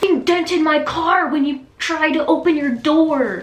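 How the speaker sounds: high, loud, intense screaming. Retelling a man who screamed at the speaker about a dented car, retelling a scream. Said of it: "he screamed at me".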